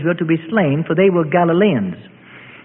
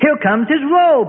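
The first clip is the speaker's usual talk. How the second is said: high-pitched, gleeful shouting; 8 semitones higher than usual. A Herodian mocks Christ as a robe is flung around him, with a gleeful shout. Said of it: "shouts in glee".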